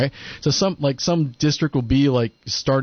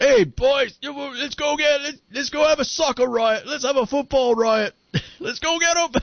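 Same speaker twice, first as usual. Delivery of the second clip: Cockney orc voice, much higher; 14 semitones higher than usual. Chatting about Cockney accents, a speaker shows the comparison in a Cockney Lord of the Rings orc voice. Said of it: "The Cockney accent sounds like the orcs".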